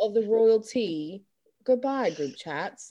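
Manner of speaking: robotic, machine-like voice-assistant tone. Signing off an episode to the group chats: Siri voice. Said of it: "Now I sound like Siri".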